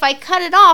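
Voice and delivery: high, loud, furious snapped-back tone.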